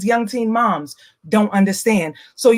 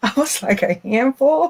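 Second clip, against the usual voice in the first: talking between giggles, laughing through the words; 3 semitones higher than usual. Answering what advice to give the twelve-year-old self, laughing while talking. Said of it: "I'm laughing 'cause".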